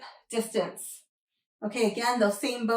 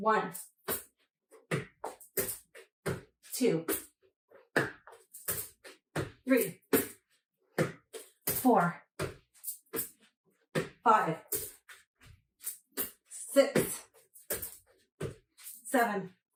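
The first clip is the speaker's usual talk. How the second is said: straining, struggling with effort; 4 dB quieter than usual. Counting plank reps during a workout, straining through exercise. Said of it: "I'm struggling".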